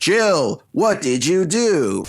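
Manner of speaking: bad old video game voice acting. Imitating the terrible voice acting of old Capcom games: atrocious old Capcom voice acting. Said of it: "old Capcom voice acting is, like, known for being absolutely atrocious".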